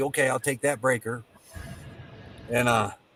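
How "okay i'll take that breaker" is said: ordinary delivery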